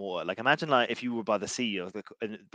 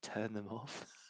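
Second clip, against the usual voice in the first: hushed whisper, much quieter; 13 dB quieter than usual. Speaker retells what she whispered to them, whispering. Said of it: "And then she whispers".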